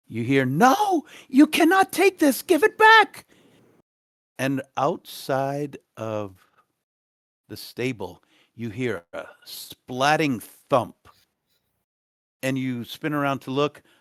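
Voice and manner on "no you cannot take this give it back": very high, very loud, rising scream. Narrating a scene where a woman screams outside during an argument: woman screaming. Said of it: "a woman screaming outside".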